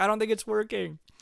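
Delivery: mock all-out yelling, high-pitched scream. Retelling wearing a headset while Nick plays, retelling own screaming. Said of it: "And I'm just screaming".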